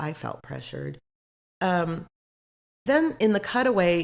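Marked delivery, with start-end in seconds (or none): 0.0-1.0 very quiet, whispered, mumbled. Recapping a scene where shots are offered: imitating Britt mumbling. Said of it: "she kinda mumbles".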